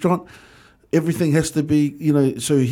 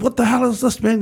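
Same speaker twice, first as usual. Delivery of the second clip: put-on British accent, pitched higher; 8 semitones higher than usual. Retelling how the executive chef swore during service: Tony Taylor's swearing British accent. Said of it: "He's swearing in his British accent".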